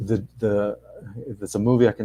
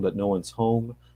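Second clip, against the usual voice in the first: ordinary talk, nothing marked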